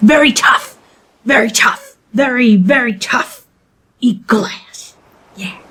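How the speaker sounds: goblin creature character voice. A storyteller voicing a goblin who is applying to be first mate, goblin voice. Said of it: "And the goblin goes".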